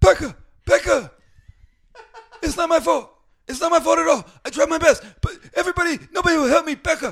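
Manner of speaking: put-on character voice yelling very high and very loud. In a group swapping impressions, doing Corky from Life Goes On impression. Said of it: "I can also do a Corky from Life Goes On".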